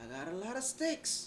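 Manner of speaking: high mock holler. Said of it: "he was hollering at them like".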